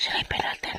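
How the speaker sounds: hushed, very quiet whisper.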